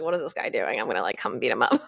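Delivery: put-on sassy New Yorker voice with New York accent. Retelling what an angry aunt said in class: imitating a sassy New Yorker. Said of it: "a sassy New Yorker girl".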